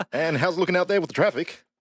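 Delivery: very high put-on Australian radio DJ accent. Playing a radio DJ in a skit: put-on Australian radio DJ accent. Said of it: "What Australian accent is that?".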